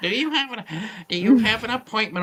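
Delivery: high, fussy put-on receptionist voice. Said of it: "I'm trying to put on my Lily Tomlin voice".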